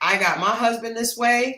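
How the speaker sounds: usual speaking voice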